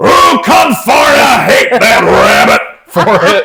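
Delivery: very high, loud, shouted cartoon cowboy voice. Showing off some Looney Tunes voices one after another, now a Yosemite Sam voice. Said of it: "some Looney Tunes voices with uh, Yosemite Sam".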